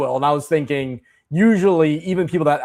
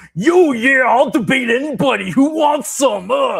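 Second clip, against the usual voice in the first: high, drawn-out, aggressive boastful tone; 10 semitones higher than usual. Retelling how someone acted late at night: Macho Man Randy Savage voice. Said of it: "like Macho Man Randy Savage and being like".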